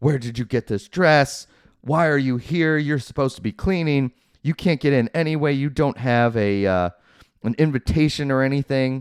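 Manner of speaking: high-pitched, scolding yell. Retelling a movie scene where Catherine yells at Cinderella: imitating someone yelling. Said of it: "starts yelling at her".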